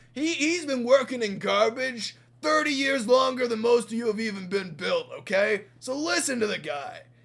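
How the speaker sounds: loud, high shout. Retelling a story, speaking as Scruff while putting Whiff in charge: Scruff's voice. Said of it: "And Scruff is like".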